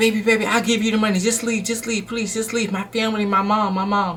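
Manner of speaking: mock desperate pleading in a man's voice. Retelling how a man begged her to just leave, retelling a man's pleading. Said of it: "begging man pleading to leave".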